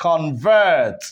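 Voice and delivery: convert with stress on the second syllable, -vert. Teaching noun-verb stress shift, convert as a verb, stress on second syllable. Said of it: "When the stress shifts from the first syllable to the second one".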